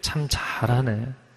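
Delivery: whispered, breathy, sarcastic. Someone ruined a performance, praising with opposite meaning, sarcastic negative nuance. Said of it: "정반대 의미로 참 잘하네. 이렇게 이야기하면 사실 부정적인 뉘앙스로".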